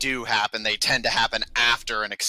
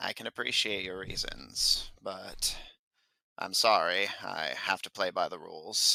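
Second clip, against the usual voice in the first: soft, low-volume speech; 3 semitones lower, 8 dB quieter than usual. The captain speaks to the five of them over the crowd's clamor, low voice. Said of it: "says in a low voice that only the five of you can hear".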